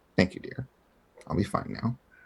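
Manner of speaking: very quiet, breathy, hushed whisper. Player role-plays returning a courtesy to a kind woman, very quiet. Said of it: "very quietly".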